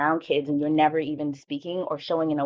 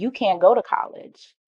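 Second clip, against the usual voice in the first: firm, final, flat, very definitive; 4 semitones higher than usual. Retelling the guidance counselor's answer: imitating a very definitive tone. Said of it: "she said very definitively to me".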